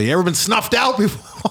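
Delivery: mock very high shout, pitch climbing upward. Retelling a film scene where a killer yells at an old lady: imitating someone yelling. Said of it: "and he yells at her".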